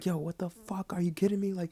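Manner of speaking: high, acted-out, flipping-out outburst. Retelling getting out of the car after the crash: reenacting flipping out. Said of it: "and I start flipping out".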